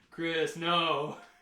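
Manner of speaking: drawn-out drawling yell. Retelling how Asher yelled once during the short film: imitating Asher's slow drawled yell. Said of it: "'cause he has this weird drawl to it".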